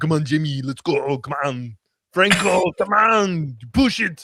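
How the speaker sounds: put-on loud yelling in an Austrian accent. Admitting he can only do the tidbits, the speaker shows one: yelling Arnold impression. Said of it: "I can just do the yelling Arnold".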